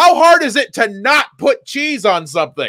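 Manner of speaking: loud high yelling. Speaker acting out what she kept yelling at the time, retelling a yell. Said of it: "And then I kept yelling".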